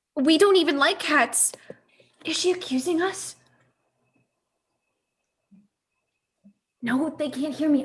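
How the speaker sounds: hushed, whispered speech. Two characters talk so the others can't hear them: whispering. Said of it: "I'm whispering".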